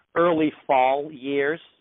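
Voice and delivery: put-on, attempted American accent. Joking about being fifty, saying a phrase in an american accent. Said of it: "Pretty good, pretty good American accent, or not?".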